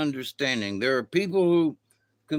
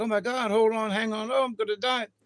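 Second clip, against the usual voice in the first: frantic, fearful, high, panicky cries; 8 semitones higher than usual. Imitating panicked rafters on the river: imitating panicked rafters. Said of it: "the folks are like".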